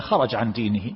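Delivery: ordinary talk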